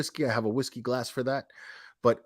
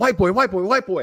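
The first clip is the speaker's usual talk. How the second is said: high, very loud, repeated hollering; 6 semitones higher, 10 dB louder than usual. Retelling a prank call to an adoption agency: imitating someone yelling loudly. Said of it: "like, really loud".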